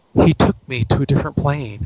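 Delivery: hushed stage whisper. Retelling how a client answered a question: imitating a client half-whispering. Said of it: "she starts whispering".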